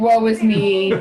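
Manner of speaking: mopey, meowing, whining cat-like lament. Describing a sulking cat under the bed, the speaker voices its whining. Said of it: "like whining, meowing".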